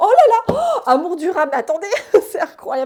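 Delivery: very loud, thrilled, swooping excited shouting. Speaker addressing listeners as friends, shouting excitedly. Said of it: "Pardon, je crie".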